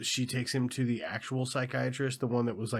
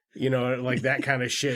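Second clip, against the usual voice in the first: ordinary talk, nothing marked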